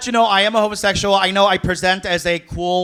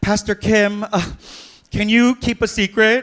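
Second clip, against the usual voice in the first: put-on voice of a teenage girl. Acting out an imagined scene where someone asks a pastor for secrecy: playing a teenage girl. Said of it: "this teenage girl coming up to me and being like".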